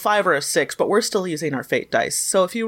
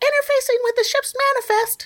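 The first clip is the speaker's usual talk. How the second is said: very high, squeaky put-on character voice. Voicing a character who taps the watch on his wrist: really high-pitched voice. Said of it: "He's really high-pitched like this".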